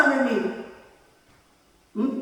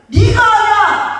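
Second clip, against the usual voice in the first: god voice, high, loud and slow. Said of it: "하나님은".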